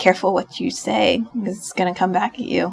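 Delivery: put-on depressed voice. Retelling what the listener said while staring at the table: imitating a quiet, depressed voice. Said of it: "You sounded so depressed".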